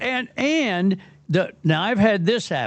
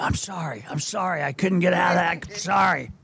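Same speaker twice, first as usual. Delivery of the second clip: put-on loud whispering; 4 dB quieter than usual. Acting out a latecomer apologizing at the show: imitating a loud whisper. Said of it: "whispering loud enough to".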